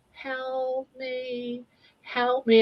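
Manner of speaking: put-on high, very slow, drawn-out old lady voice. Retelling a voice heard from the bedroom at the top of the stairs, old lady's voice. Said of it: "it's like an old lady's voice".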